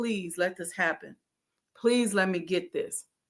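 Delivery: desperate, pleading, begging tone. Retelling a prayer over printed booklets: imitating own past begging. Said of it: "I was coming from begging".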